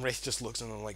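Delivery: ordinary delivery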